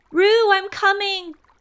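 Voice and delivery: calling out, very high-pitched. Christopher Robin calls to Roo, who has fallen into the stream: calling out. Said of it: "called Christopher Robin".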